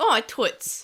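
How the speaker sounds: attempted New York tough-guy accent. Quoting Marcus's line from the English dub: Marcus New York gangster accent. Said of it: "this attempted New York si-, kind of, like, gangster accent".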